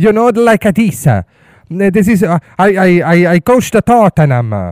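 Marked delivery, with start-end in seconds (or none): 1.7-4.7 put-on thick Italian accent, drawn-out "I". Mimicking a tottenham coach who kept his italian accent, heavy italian accent in english. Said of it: "não perdeu um pintelho do seu sotaque italiano".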